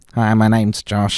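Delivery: sneaky, weaselly put-on voice. Imitating a friend to mock him: Josh voice. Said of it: "like a weaselly voice".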